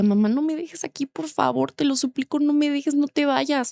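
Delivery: put-on crying little girl voice, high and tearful. Retelling begging her mother not to leave her at school; imitating a crying child's plea. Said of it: "Yo hacía lloraba antes de entrar a la escuela y le decía".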